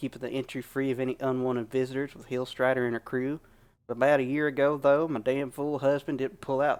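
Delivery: plain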